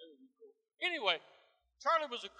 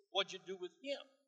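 ordinary talk

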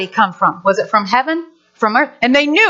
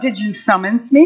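put-on British gentleman accent, lower pitch; 4 semitones lower than usual. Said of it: "I would like everybody to say".

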